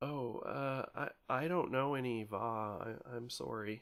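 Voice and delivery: thin quavering male voice. Voicing a huddled figure greeting players: thin wavering male voice. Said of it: "a thin, kind of wavering male voice".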